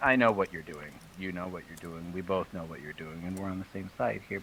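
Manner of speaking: low, very hushed, barely audible half-whisper. Addressing the dwarf, who is still frozen; half-whispering. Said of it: "I'm whispering this to him".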